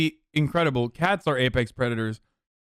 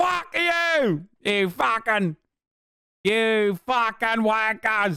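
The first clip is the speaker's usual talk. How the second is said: put-on Australian accent, high, very slow, drawn-out; 7 semitones higher than usual. Mocking Australians while joking with others: put-on Australian accent. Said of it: "the term that Australians even use".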